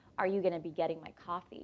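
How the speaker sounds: ordinary delivery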